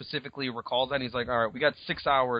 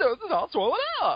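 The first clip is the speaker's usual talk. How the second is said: put-on overexcited voice, higher pitch; 4 dB louder than usual. Repeating a comic character's line the way imagined: put-on overexcited voice. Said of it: "more excited than she needs to be".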